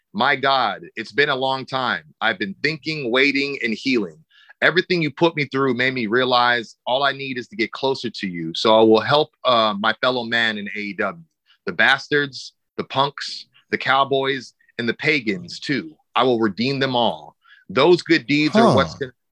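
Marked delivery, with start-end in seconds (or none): none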